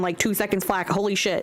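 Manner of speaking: usual speaking voice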